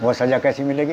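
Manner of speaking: ordinary delivery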